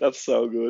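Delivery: cracking up while speaking. Reacting to a funny clip just played, laughing while talking. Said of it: "I can't stop laughing over".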